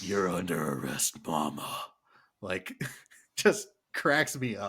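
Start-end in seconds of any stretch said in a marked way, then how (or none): 0.0-1.8 low, gruff, grisly cop voice, growled. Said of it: "Karl Urban say ... in his gruff, grisly voice".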